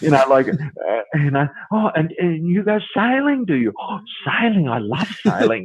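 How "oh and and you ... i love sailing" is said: overeager, high, eager puppy-dog chatter. Mocking dentists building rapport: imitating an eager dentist. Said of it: "like a little puppy dog with the tail wagging".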